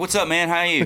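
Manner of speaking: put-on amped-up voice. Describing usually being more amped up, imitating own amped-up greeting. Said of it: "usually I'm way more amped up. I'm like".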